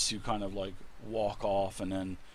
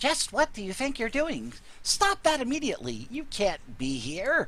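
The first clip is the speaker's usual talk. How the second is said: tiny, very high, squeaky voice; 13 semitones higher, 3 dB louder than usual. Speaker telling of drawing a bowstring when a voice objects, in a little tiny voice. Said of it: "you hear a little tiny voice and it says".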